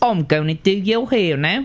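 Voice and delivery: put-on English accent impression. Joking about a butler doing someone's hair: Michael Caine impression. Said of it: "How's my Michael Caine?".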